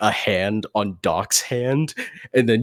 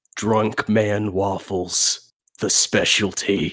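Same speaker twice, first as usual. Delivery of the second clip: secretive, hushed stage whisper; 3 semitones lower than usual. Retelling what a bartender said after looking over at the kitchen, retelling a half-whisper. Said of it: "he just whispers it".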